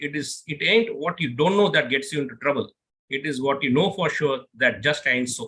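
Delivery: ordinary talk, nothing marked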